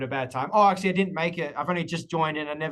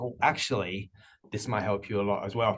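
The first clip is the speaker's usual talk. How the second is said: low, confiding, secretive tone; 6 semitones lower than usual. Speaker demonstrating how to offer a suggestion, lowered, secretive tone. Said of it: "I lowered my tone, make it a bit like secret".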